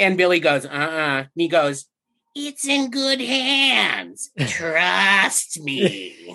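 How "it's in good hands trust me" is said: put-on very slow, swooping, raspy old elf voice. Like a wheezy old elf smoothly reassuring a kid, in an impression that is deliberately creepy and gravelly. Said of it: "You sound like a chain smoking 80-year-old elf".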